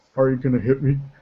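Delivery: put-on flat deadpan delivery. Describing a character accosted by hooligans, retelling a deadpan line. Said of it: "But complete deadpan".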